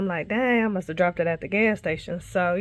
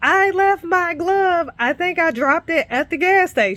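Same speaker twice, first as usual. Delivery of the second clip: very high, raised, high-pitched calling-out voice; 10 semitones higher, 6 dB louder than usual. Speaker acts out talking to someone who can't hear: retelling own raised voice. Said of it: "now I'm raising my voice".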